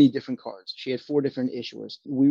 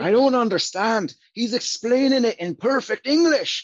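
put-on Irish accent; 10 semitones higher than usual. Quoting a man in a story, irish accent. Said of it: "a much better Irish accent".

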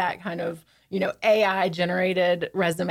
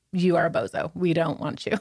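normal talking voice

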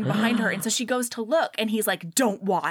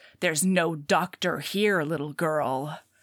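put-on growl, lower pitch; 6 semitones lower than usual. Retelling a scene from a book where he growls: imitating a growl. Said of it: "and he growls".

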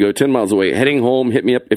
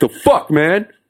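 pitched-up street-tough, confrontational tough-guy voice; 6 semitones higher than usual. Retelling confronting someone who broke the glasses: imitating own deep tough voice. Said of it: "Putting bass in my voice".

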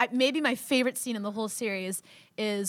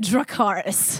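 put-on loud plain American accent; 6 dB louder than usual. Retelling how a character later commands her dragons: imitating Daenerys's American accent. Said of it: "It's all American".

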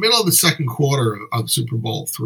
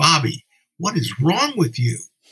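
play-acted exclamation called out from the back; 4 semitones higher than usual. Recounting how his dad yelled at him during a football game, retelling a yell. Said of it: "yelled out".

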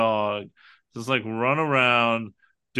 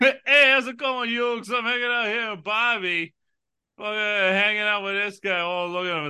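put-on, pitched-up, friendly Brooklyn accent; 9 semitones higher than usual. Talking about a man from Brooklyn with a dog, imitating Preminger, Brooklyn accent. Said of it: "he's from Brooklyn?".

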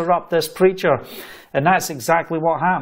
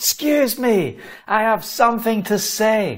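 pitched-up calling out; 5 semitones higher than usual. Retelling interrupting a pastor in front of thousands of people, retelling a shout. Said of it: "and I'm having a shout".

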